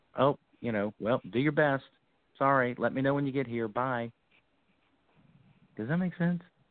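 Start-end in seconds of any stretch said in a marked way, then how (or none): 0.2-4.2 higher-pitched, condescending, dismissive tone. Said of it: "a condescending of".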